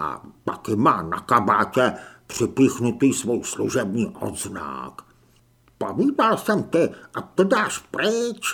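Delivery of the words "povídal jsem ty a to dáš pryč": hissed, sibilant, pitched up. Narrator reads Noby telling his companion to take it off, Noby hissing. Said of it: "zasyčel Noby".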